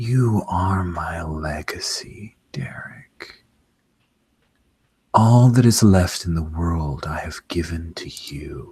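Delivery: quiet, close whispering. A storyteller voices a woman whispering into Derek's ear: whisper. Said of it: "she whispers into your ear".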